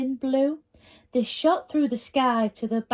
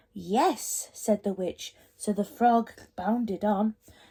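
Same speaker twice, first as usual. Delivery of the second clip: ordinary delivery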